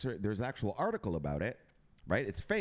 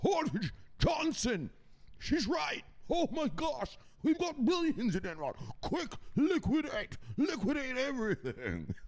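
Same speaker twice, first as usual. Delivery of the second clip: put-on very high old rich-man voice. Acting out the rich guys finally looking at the numbers, in an old rich man voice. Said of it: "That's my old man rich guy voice".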